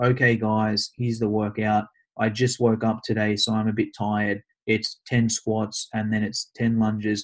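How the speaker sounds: low, flat, dead-level monotone drone. Demonstrating how to announce a workout: flat monotone voice. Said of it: "If you just talk in a monotone voice like this".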